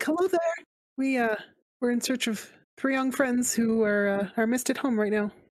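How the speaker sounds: kindly, as friendly as possible. Calling out while searching for three missing young friends, friendly voice. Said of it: "as friendly a voice as I can muster".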